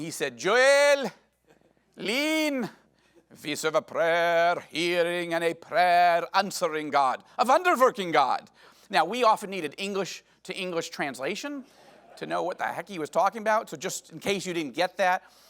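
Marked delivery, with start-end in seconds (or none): 0.4-8.4 put-on very thick Indian accent, loud and slow. Retelling what the man who discipled them said, in a thick indian accent. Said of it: "very thick Indian accent".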